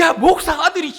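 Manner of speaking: acted furious outburst, high and loud. Retelling scolding a son who ate without praying: retelling an angry outburst. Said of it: "순간 너무 화가 나니까".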